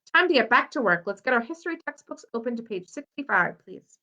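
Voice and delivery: ordinary delivery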